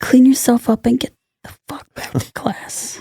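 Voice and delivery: hushed, breathy whisper. Retelling what the mother said in the nurse's office: imitating mom. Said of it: "and she was like".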